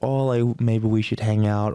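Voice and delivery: ordinary talk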